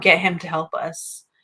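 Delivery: ordinary talk, nothing marked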